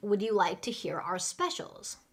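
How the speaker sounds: normal talking voice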